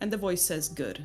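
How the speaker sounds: plain reading voice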